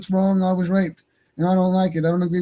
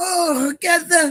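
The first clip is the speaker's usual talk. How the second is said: heavy, exaggerated put-on Arabic accent, high pitch; 10 semitones higher than usual. Mimicking the other person's pronunciation when triggered: mock heavy accent. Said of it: "Their accent gets real heavy when they get triggered".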